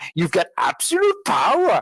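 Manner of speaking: high, swooping put-on voice. Retelling a film scene where a boy does a Yoda impression. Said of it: "and he does the Yoda impression".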